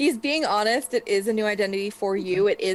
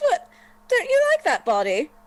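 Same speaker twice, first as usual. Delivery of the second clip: very high, swooping giggle-talk, giggling throughout; 9 semitones higher, 3 dB louder than usual. Voicing a character who dodged an arrow: giggling while speaking. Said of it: "you just hear him giggling".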